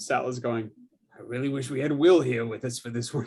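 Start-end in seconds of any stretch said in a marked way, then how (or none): 1.2-3.3 spoken quietly under the breath, private aside. Voicing Sal in the scene: muttering under his breath. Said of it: "under his breath".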